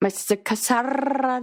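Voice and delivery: put-on strong rolled R accent. Speaker describing a woman's accent on Love Is Blind, heavy rolled-R accent. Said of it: "heavy roll in her R".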